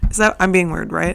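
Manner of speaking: plain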